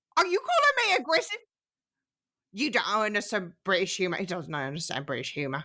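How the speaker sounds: put-on voice, low with swooping pitch. A friend calls it a spot-on impression, done as Sophie's mom impression. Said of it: "a spot on impression of Sophie's mom".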